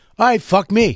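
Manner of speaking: mock irritated tone. Retelling how a friend reacted to a bad hello: imitating Mike getting pissy. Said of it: "got all pissy with me".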